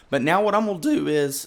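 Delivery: voice breaking and cracking mid-phrase. Explaining a redstone build to viewers when the voice cracks. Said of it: "voice crack".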